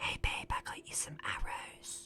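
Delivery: very quiet, hushed, private whisper. A player's character whispers to Mamba, whispering very quietly. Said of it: "I'm gonna whisper very quietly to Mamba".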